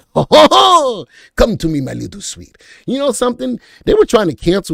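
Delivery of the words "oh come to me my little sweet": high, loud, swooping, drawn-out French cartoon skunk voice. After trying some French and your French accent, you go into a Pepe Le Pew voice. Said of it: "sound like Pepe Le Pew".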